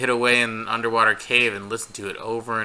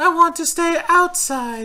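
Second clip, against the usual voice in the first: put-on tiny British child voice, much higher and louder; 4 dB louder than usual. Exploring an old church in a game, voicing the little kid: little kid voice. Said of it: "That's my voice for the little kid now".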